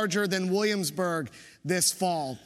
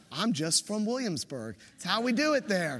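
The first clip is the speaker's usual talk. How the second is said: plain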